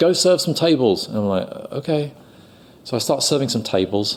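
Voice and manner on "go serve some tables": high-pitched shouting. Retelling what the producer shouted out to him during filming: retelling a shout. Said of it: "the producer shouts out".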